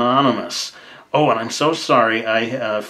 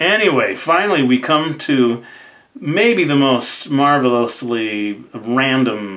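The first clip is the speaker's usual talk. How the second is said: ordinary talk, nothing marked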